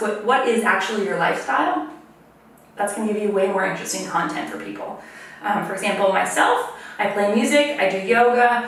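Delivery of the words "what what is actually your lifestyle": normal talking voice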